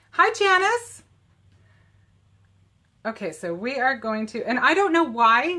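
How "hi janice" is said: raised pitch, higher and louder. Greeting viewers by name as they join: higher-pitched greeting. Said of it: "my voice gets higher when I say hi".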